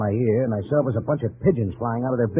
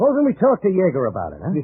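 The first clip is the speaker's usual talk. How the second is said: loud, high, swooping, raised voice; 8 semitones higher, 3 dB louder than usual. Confronting a man once convicted of embezzlement, in a loud, raised voice. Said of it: "please lower your voice".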